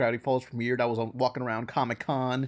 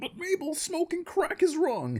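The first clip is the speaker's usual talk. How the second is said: very high, swooping cartoon voice. Doing an impression of Dipper when asked to end the podcast: Dipper impression. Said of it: "an impression of Dipper".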